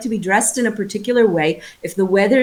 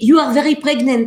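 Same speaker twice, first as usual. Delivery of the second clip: put-on French accent, lilting and pitched up; 5 semitones higher, 3 dB louder than usual. Retelling what a French doula said: imitating a French accent. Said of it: "she would speak with an accent like this".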